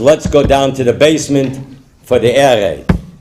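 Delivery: ordinary delivery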